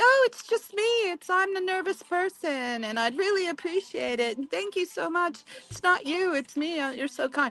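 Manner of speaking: put-on super sweet voice. Retelling asking an approaching stranger to keep away: imitating own super sweet tone. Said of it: "I was super sweet to him".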